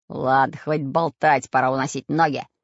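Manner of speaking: sharp, barked out. Narrator reads Bul-Bul's line to the others, barked. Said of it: "рявкнул".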